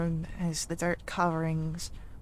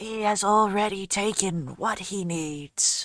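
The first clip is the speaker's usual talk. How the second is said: put-on loud, scratchy old voice, like scraping coarse stone; 3 semitones higher, 5 dB louder than usual. A narrator voices an unseen figure calling out across the fields: scratchy old voice. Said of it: "scratched as if it has been dragged over coarse stone".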